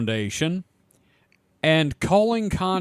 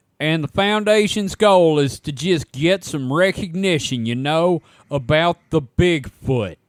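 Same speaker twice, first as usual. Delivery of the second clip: ordinary delivery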